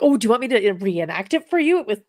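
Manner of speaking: mock thrilled, keen, excited, swooping eager tone. Retelling how an eager suspect offered to reenact it: imitating an excited man. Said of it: "he was so excited".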